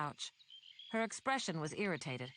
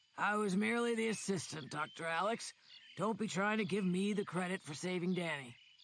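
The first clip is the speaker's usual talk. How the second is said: gravelly, rough voice. Narrator reads Volkstaff breaking in to speak to Doctor Alex, Volkstaff's gravelly voice. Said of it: "Volkstaff's gravelly voice broke in".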